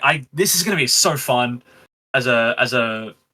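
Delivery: ordinary talk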